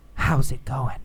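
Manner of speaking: whispering. Explaining yell versus whisper, demonstrating the whispered version; whispering. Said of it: "Or did he whisper".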